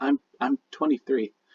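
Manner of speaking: plain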